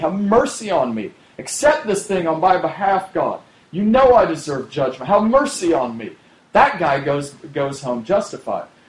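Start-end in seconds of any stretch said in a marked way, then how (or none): 0.0-6.2 mock cry for mercy in a higher voice. Retelling the tax collector crying out to God: acting out crying for mercy. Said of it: "he's crying out for mercy".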